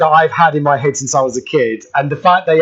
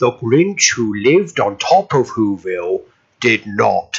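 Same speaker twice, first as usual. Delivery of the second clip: deep, slow, deliberate, weighty storybook narrator voice; 5 semitones lower than usual. Quoting the original Grinch cartoon narration: Boris Karloff impression. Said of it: "That was his actual voice".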